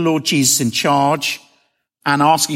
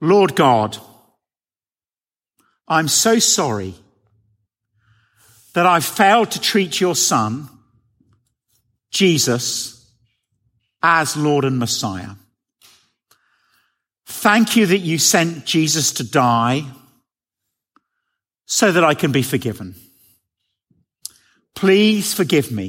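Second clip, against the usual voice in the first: very slow, deliberate speech, spoken phrase by phrase. Leading listeners in a prayer to repeat in their own hearts, saying it slowly. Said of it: "I'll say it slowly".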